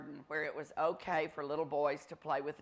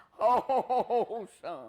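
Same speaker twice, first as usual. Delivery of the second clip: mock-pained, much higher and louder; 8 semitones higher, 6 dB louder than usual. Recalling how he used to call you son, act it out, imitating someone in deep pain. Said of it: "as if he was in deep pain".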